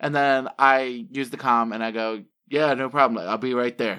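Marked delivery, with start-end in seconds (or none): 2.5-4.0 fast, rough, gruff put-on voice. Role-playing an answer over the comm, in a gruff voice. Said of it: "make my voice all gruff".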